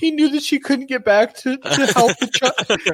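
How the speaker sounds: very high, very loud, tearful crying words. Retelling explaining a film to a daughter mid tears: retelling own tearful words. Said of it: "mid tears".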